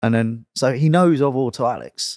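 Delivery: ordinary talk, nothing marked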